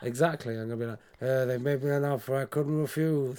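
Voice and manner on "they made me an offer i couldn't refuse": movie mafia don voice. Joking about being asked to be godfather: Marlon Brando Godfather voice. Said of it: "That was a good Brando".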